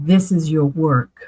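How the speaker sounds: imitated booming voice. Recounting a voice heard while watching a show about mediums, retelling a booming voice. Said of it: "it was almost a booming voice".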